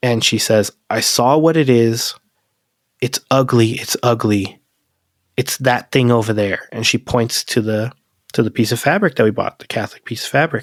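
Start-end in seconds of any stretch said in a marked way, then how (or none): 0.9-6.7 mock full-on crying, tearful delivery. Retelling the fiancée waking up and pointing at something: imitating someone crying. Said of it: "she's crying, full on crying".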